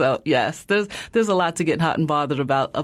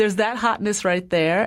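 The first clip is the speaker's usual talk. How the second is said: usual speaking voice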